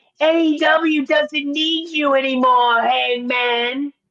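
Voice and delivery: mocking, put-on annoying voice. Repeating how someone said a line about hangman, annoying imitation voice. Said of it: "Let me do it in his annoying voice".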